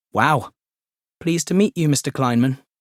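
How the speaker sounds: usual speaking voice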